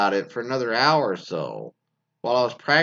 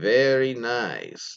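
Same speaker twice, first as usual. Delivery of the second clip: rolled R in very, nice drawn out. Reading a submission in which the boyfriend says this: Borat impression with rolled R's. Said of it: "in his best Borat impression".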